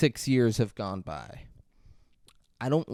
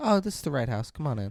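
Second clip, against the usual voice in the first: ordinary delivery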